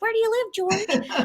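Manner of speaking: very high, squeaky little chipmunk voice. Retelling offering a classmate a ride when both were tiny: little chipmunk voice. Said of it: "I guess I had this little like chipmunk voice".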